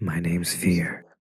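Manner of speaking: almost a whisper. Reading a quiet character's line giving his name: almost a whisper. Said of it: "almost in a whisper he adds".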